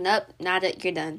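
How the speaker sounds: usual speaking voice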